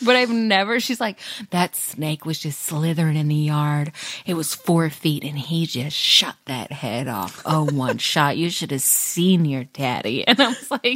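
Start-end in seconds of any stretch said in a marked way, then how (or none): 1.5-10.3 mock-horny put-on voice. Telling a story about her dad, the speaker quotes her mom: mock-horny mom impression. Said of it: "I've never heard my mom so horny".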